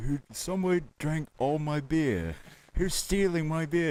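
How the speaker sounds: high-pitched, complaining put-on voice. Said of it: "Ozzy's coming out of the room. He's like".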